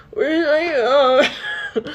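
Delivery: fake drunk voice. Retelling how he asked for his phone while pretending to be drunk: imitating his drunk-acting voice. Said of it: "he didn't say it like, he goes".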